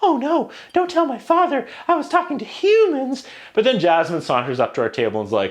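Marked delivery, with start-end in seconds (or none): 0.0-3.3 tiny, squeaky, very high-pitched voice. Describing princess performers at a child's birthday, doing a tiny squeaky Ariel voice. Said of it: "They all have their tiny squeaky princess voices".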